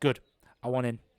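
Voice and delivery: cocky, arrogant tone. Voicing a cocky medal winner at the fair stand: cocky voice. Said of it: "And he's very cocky".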